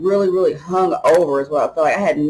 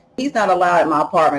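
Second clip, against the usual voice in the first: ordinary delivery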